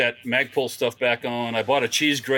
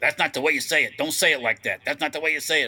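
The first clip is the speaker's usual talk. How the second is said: mock agitated, worked-up voice; 2 semitones higher than usual. Retelling how people corrected a pronunciation: imitating worked-up people. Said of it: "Don't get all worked up about it".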